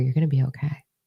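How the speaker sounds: soft, hushed, half-whispered stage whisper. Retelling a meditation, speaking to a younger self: retelling a half-whisper. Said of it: "And I whispered to her".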